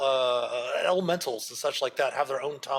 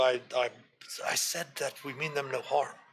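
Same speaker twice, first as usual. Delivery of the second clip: whispered, quieter and slower; 4 dB quieter than usual. A game master voices a companion character whispering to a player, whispering. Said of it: "and she whispers to you".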